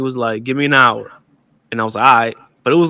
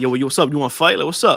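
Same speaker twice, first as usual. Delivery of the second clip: put-on playful, joking tough-kid taunting tone; 3 semitones higher than usual. Retelling how kids would joke around, imitating a playful fight challenge. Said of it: "you would joke around".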